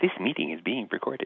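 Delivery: perky, chirpy, automated-recording announcement voice. Retelling the automatic meeting recording notice: imitating a chirpy little voice. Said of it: "the chirpy little voice saying".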